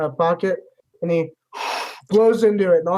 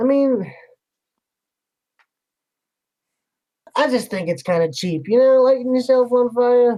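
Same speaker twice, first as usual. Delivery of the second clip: faintly jealous tone, pitched much higher; 6 semitones higher than usual. Narrating a scene, voicing Siegfried as he tells the listener this, with a hint of jealousy. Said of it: "a hint of jealousy in Siegfried's voice".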